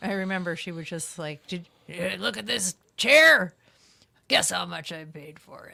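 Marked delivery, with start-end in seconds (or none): 1.5-5.7 very loud, raspy, rough wrestler voice. Recalling a woman bragging about a sixty-dollar chair, professional-wrestler-sounding impression. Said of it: "she did sort of sound like a professional wrestler".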